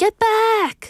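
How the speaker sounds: very high, alarmed, panicky cry. Warning someone to get back, said in a panicky tone. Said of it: "we have to say it in a kind of like a panicky tone".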